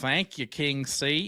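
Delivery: put-on jokey Southern accent. Commentator thanking whoever made a sign in the crowd, mock Southern accent. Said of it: "You went all Southern on that one".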